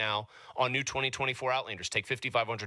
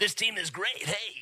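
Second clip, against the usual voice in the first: corny, pitched-up nerdy voice; 7 semitones higher than usual. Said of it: "Is that your Poindexter voice?".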